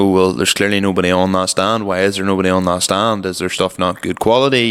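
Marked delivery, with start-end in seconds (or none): none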